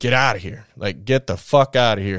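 ordinary talk

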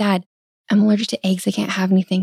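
whispering. Retelling how a little girl told her dad: imitating a girl whispering. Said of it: "she whispered to him".

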